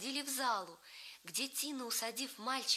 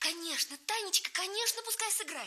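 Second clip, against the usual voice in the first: high, excited, eager pleading voice; 8 semitones higher, 5 dB louder than usual. [name], clapping for joy, begs her sister Tanya: pleading. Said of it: "упрашивала она сестру".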